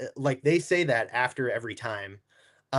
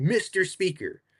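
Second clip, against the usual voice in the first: heavy acted sarcasm, pitched up; 5 semitones higher than usual. Retelling how he addressed the Speaker once interruptions stopped, imitating a sarcastic tone. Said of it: "he very like sarcastically was like".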